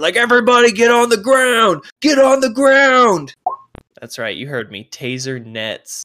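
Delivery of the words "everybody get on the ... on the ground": very high, loud, screamed delivery. Voicing guards breaking up a fight: guards screaming orders. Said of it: "they just start screaming".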